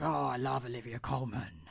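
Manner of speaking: low, soft, hushed, smoky smoker's voice. Imitating an actress heard in an interview, in a Maggie Gyllenhaal voice like a heavy smoker.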